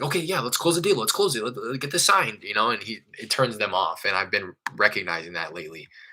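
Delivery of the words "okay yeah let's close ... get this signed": put-on eager, keyed-up excitement with pitched-up, swinging pitch. Retelling own eager push to close a deal on a phone call: imitating own excited voice. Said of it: "excitement in my voice".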